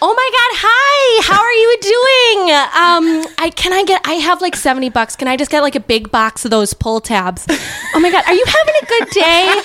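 high, loud, swooping, animated sing-song voice. Imitating her mother talking to a clerk after being asked: imitating her mother's voice. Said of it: "mock your mother's voice".

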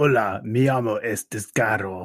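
put-on Spanish-accented character voice. The group imagines giving Descaro a microphone; Descaro voice speaking Spanish. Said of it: "he would speak in Spanish".

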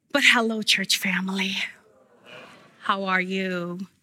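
hoarse voice. Preacher greeting the church family after worship, raspy voice. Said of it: "forgive me if I sound raspy".

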